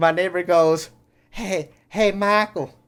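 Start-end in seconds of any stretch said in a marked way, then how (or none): 1.3-2.7 put-on, pitched-up American southern accent. Retelling what a neighbor called out to him: southern accent. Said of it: "I don't know why I'm doing a southern accent right now".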